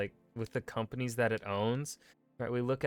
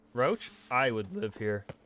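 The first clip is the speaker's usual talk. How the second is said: voice cracking and breaking; 3 dB louder than usual. Admiring a place in a game, voice cracking. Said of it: "My voice cracked".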